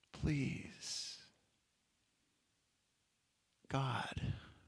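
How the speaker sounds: soft, hushed whisper. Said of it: "whispering something like".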